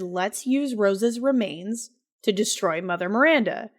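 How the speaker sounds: usual speaking voice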